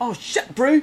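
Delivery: very high, very loud, shrill put-on New Zealand accent. Asked whether they can do a new zealand accent, the speaker tries: put-on new zealand accent. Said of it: "I'm doing a New Zealand accent".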